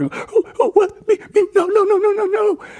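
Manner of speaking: play-acted timid, wimpy stammer, pitched way up. Retelling own reaction when a man pointed toward Billy, acting out a wimpy stammer. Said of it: "I was just a wimpy little cow".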